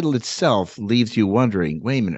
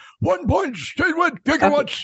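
squeaky-high put-on eccentric scientist voice. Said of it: "You say it like him".

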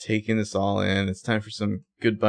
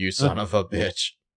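normal talking voice

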